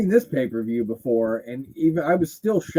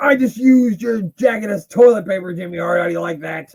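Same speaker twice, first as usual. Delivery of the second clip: raised, loud, high-pitched jeering tone; 6 semitones higher, 7 dB louder than usual. Joking along with a wrestling match on screen: imitating Vader. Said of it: "he's like".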